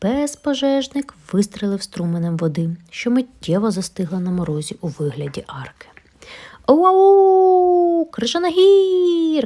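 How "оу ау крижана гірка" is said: very high, long, delighted, joyful squeal. Narrator reads a pup's cry at the frozen water arch, rejoicing. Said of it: "радіє Еверест".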